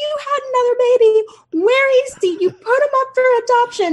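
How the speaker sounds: fake sobbing, high and loud. Retelling a family member's panicked accusation to her mom: imitating someone sobbing. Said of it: "And she's sobbing".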